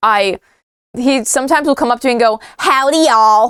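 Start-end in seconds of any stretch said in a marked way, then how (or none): 2.6-3.5 awkward, bad put-on American accent. Retelling how a friend greets them trying to speak American: imitating a friend's bad American accent. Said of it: "try to speak American. It's bad".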